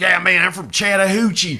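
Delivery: hillbilly-style country accent. Showing how a place name sounds with a certain accent: imitating a certain accent. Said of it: "if you say it with a certain accent".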